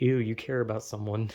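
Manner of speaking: plain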